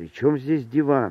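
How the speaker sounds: plain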